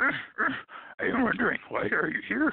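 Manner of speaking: very high, very slow, stretched-out puppet voice. Showing how Grover sounds like Yoda: Yoda-like Grover voice. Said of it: "practically the same voice".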